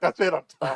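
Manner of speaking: high, loud cry, sounding beaten and giving up. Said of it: "until the dude was like".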